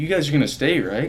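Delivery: lighthearted teasing delivery. Recalling what he said when classmates were leaving, retelling a joking question. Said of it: "he was like jokingly".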